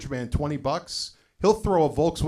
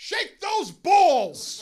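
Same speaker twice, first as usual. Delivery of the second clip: put-on very high shriek in a rough woman's voice; 14 semitones higher than usual. Retelling a bingo night when a player jumps up: imitating a lady screaming. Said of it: "this lady jumps up and screams".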